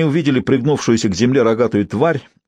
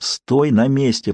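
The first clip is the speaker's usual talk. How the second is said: whispered, slower. Jinx speaks as he prepares a spell, whispered. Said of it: "прошептал Джинкс".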